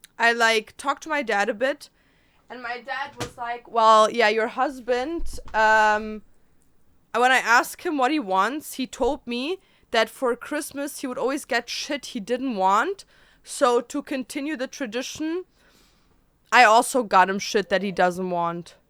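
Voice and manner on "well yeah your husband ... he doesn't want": ordinary talk, nothing marked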